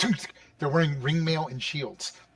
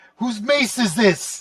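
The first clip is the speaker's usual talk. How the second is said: loud, raised, demanding yell; 8 semitones higher, 8 dB louder than usual. A game master voices a woman character calling out to the party: yelling. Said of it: "you hear her basically yelling".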